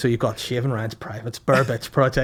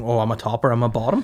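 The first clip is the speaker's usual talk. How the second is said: plain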